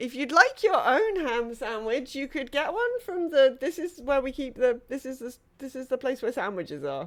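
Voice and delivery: bewildered, flustered, confused rambling. Voicing a startled character caught holding a sandwich: confused, flustered. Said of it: "he's just looking very confused".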